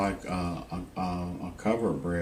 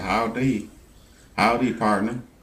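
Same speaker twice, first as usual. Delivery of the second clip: put-on country accent, higher and louder; 4 semitones higher, 7 dB louder than usual. Retelling what a friendly man said: imitating a country accent. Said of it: "They got a country accent".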